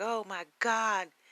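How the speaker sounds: play-acted, high, frantic, freaked-out, panicked outburst. Retelling a phone call, imitating his mom freaking out. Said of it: "she's freaking out".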